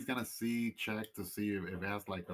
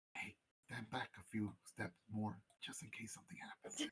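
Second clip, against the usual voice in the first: very quiet, soft, hushed whisper; 9 dB quieter than usual. Voicing a character who warns the badger to step back: whispering. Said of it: "whispers to the badger".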